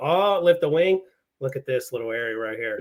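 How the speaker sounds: ordinary delivery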